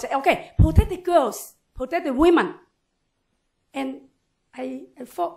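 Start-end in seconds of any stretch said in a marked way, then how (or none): 0.0-2.5 high-pitched shouting in put-on men's voices. Retelling a protest where men called out: imitating men shouting. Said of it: "men shout".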